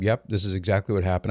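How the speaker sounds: plain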